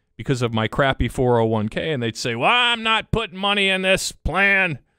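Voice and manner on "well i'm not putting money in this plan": peeved, annoyed complaining, higher pitched. Retelling what an annoyed person in a 401k meeting tells him, imitating an annoyed attendee. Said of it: "somebody in there annoyed with me".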